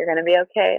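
ordinary talk

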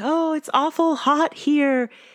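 very high, slow, drawn-out spectral ghost voice. Recounting a favorite line where Lucy burns herself on the fire, Lucy's ghost voice. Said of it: "she says in her ghost voice".

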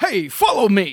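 square, earnest, wholesome hero voice. Discussing how Cap sounds in his head, the speaker does a Captain America voice. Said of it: "I read Cap like".

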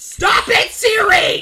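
high, loud shout.

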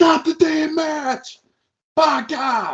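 high, slow, drawn-out scream.

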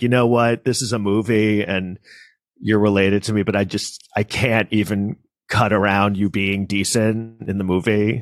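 normal talking voice

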